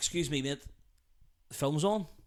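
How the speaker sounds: soft, snide, pointedly polite, passive-aggressive tone. Role-playing asking noisy cinema talkers to be quiet: passive aggressive. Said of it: "that's very passive aggressive".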